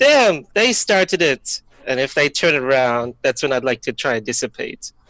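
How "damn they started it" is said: sudden, blurted-out, high, loud scream. Acting out the character's line in the game: screaming. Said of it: "and then I randomly scream".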